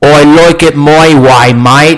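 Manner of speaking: Australian accent. Speaker demonstrating the long I sound in an example sentence: Australian accent. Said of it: "demonstrate a sentence with the long I sound".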